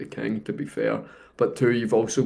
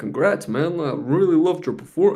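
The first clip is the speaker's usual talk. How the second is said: put-on solid American accent, pitched up a touch; 6 semitones higher than usual. Imagining what Barack Obama would say to them: Barack Obama impression, American accent. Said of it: "That was a pretty good American accent there".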